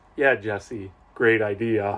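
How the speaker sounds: acted out, dry, insincere, sarcastic tone. Retelling a father's reply to a plan he dislikes: imitating a sarcastic reply. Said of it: "sarcastically says".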